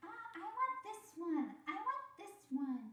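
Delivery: put-on high, slow whiny child voice.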